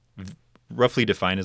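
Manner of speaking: ordinary talk, nothing marked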